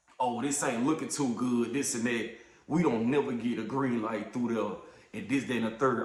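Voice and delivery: ordinary talk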